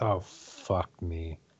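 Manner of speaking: muttered under the breath. Playing Selena reacting to the new soldiers: under her breath. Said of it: "under her breath".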